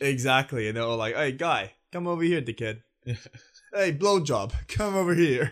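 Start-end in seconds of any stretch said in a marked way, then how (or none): 1.2-5.5 put-on Long Island accent, higher, slower. Speaker imitates the stock traders from Suits; Long Island accent. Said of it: "you were transported to Long Island when Basil started talking like that".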